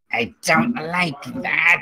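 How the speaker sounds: brief, hissing delivery. Voicing the figure struck by the lightning as he hisses at you, hissing. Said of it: "he kind of hisses at you for a second".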